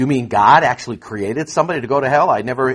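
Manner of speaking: ordinary talk, nothing marked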